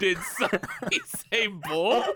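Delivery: sudden, high, blurted shout. Retelling popping out of a box on stage mid-line: retelling a shout. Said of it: "just shout".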